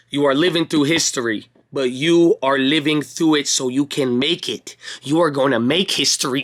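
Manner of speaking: slowed-down, slow pace. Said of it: "I'm gonna say it slower this time".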